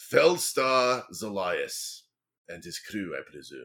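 low-pitched, slow dwarf voice. Voicing a dwarf who steps forward to greet the crew: voicing the dwarf Kimril Novagard. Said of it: "And he steps forward and says".

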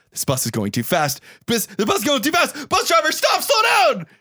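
frightened, very high, swooping, rising panicked cries. Retelling a movie scene on a bus, imitating a scared character. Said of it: "he gets all scared".

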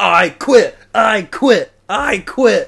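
booming, very slow, high-pitched bellow. Retelling a rampage through a store: imitating someone yelling. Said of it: "as he's knocking shit all over the place".

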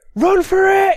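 very high-pitched, full-throated, top-of-the-lungs shout. As Thryn, calling out to everybody before running for the gate, shouting at the top of voice. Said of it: "shout at the top of his voice".

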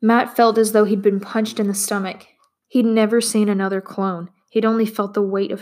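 plain reading voice

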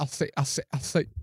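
sputtering put-on voice. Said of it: "Old Foghorn Leghorn".

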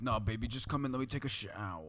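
put-on coaxing, persuasive voice with Long Island tinge. Retelling a tape of Harvey Weinstein urging a girl into his room: Harvey Weinstein impression. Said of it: "he's just like".

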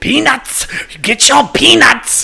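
loud, shrill, very high, yelled fake German accent. Joking with friends about a German baseball game, in a put-on German accent. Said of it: "your that German accent?".

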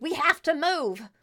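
urgent high-pitched yelling. Voicing a character grabbing a frozen companion's arm: yelling. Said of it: "she just yells towards you".

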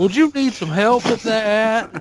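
put-on high Southern accent, drawn out, helper voice. Showing the others the Clippy voice he was doing, Southern-sounding. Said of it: "Why could be Southern?".

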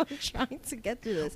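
words broken up by laughing throughout. Trying to finish a story while the other speaker keeps joking: laughing while talking. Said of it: "Stop making me laugh".

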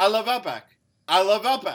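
shrill, booming, very loud, high put-on Australian accent. Trying out accents for points while the others judge: put-on Australian accent. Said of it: "I can do better Australian accent right now".

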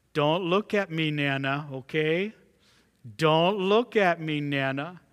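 imitated child voice, speaking very sweetly. Retelling a granddaughter asking her grandmother not to look: imitating a child speaking very sweetly. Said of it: "she said very sweetly to her grandmother".

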